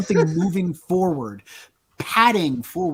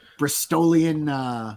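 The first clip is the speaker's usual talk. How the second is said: plain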